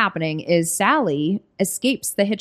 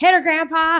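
mock twangy backwoods screaming, higher in pitch; 10 semitones higher, 4 dB louder than usual. Retelling a scene where a family screams at grandpa: imitating twangy backwoods screaming. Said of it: "they are so twangy and scary and backwoods".

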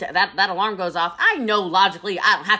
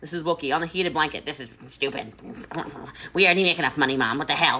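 angry, pissed-off griping rant; 4 semitones lower, 5 dB quieter than usual. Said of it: "She's pissed".

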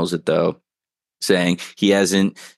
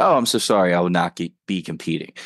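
ordinary talk, nothing marked

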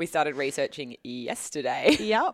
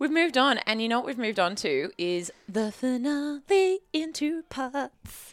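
chipper game-show announcer voice, pitched higher; 10 semitones higher than usual. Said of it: "Sounded like Wheel of Fortune".

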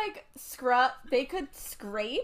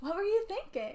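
high, sugary, fake-nice put-on polite tone; 6 semitones higher, 7 dB quieter than usual. Acting out how the question sounds to the author: put-on fake-nice tone. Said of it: "to her, it would sound like".

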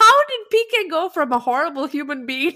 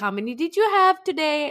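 mock child-directed speaking voice. Retelling how she asks him something: imitating talking to him like a child. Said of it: "she does talk to him like a child".

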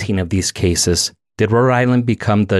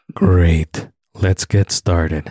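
solemn, grave, serious announcer tone; 3 semitones lower than usual. A podcast host starts the episode with a guest, in a dark topic voice. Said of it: "This is your dark topic voice".

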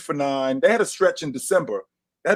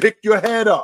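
mock screaming, higher and louder; 5 semitones higher, 6 dB louder than usual. Retelling screaming at a player who hid in the corner: imitating own screaming. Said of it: "I'm screaming".

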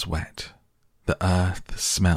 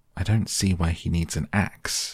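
plain reading voice

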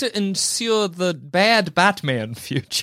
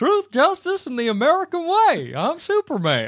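put-on high Southern country-boy voice; 7 semitones higher than usual. Showing how this version of Superman sounds: southern Superman voice. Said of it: "he's Superman's from a good southern boy from Kansas".

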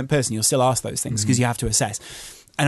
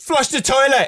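acted-out, very high-pitched, furious shout; 13 semitones higher, 4 dB louder than usual. Retelling what he shouted through the house: imitating someone shouting. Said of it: "he shouts and he goes".

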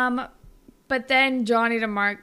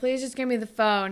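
normal talking voice

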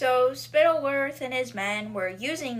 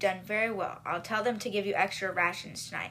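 ordinary talk

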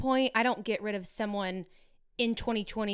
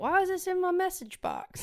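put-on very high, swooping old general voice; 10 semitones higher than usual. Retelling how he reacted to a message: imitating him like an old Confederate general. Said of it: "Is that how I sounded? Like an old, like an old Confederate general?".

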